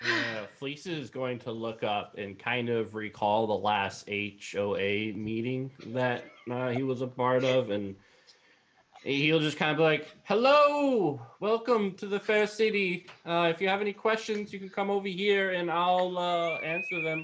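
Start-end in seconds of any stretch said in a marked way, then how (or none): 10.2-17.2 high, shrill shout, pitched way up. Greeting a creature from afar as the character Fleece: yelling. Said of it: "you're yelling this at him?".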